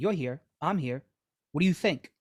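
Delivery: imitated Spanish shopkeeper voice. Retelling a comedian's impersonation of a bodega owner: imitating a Spanish bodega owner. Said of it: "an impersonation of, like, I guess, a Spanish dude who was owning a bodega".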